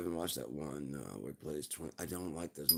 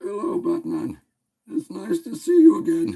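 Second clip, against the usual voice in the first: very high, loud, slow character voice, cracking; 20 dB louder than usual. Greeting Batman in a put-on voice for fun: Bane voice. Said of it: "I just like doing the Bane voice".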